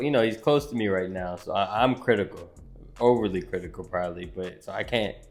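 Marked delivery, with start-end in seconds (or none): none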